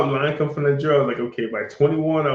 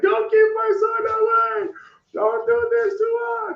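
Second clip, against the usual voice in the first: very high, terrified, pleading scream. Retelling a mother pleading not to give her son away: imitating a terrified scream. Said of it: "terrified, screaming".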